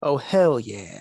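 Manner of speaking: deep car-commercial announcer voice. Asked to say a catchphrase deeper, in an AutoZone commercial voice. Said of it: "you're like in an AutoZone commercial".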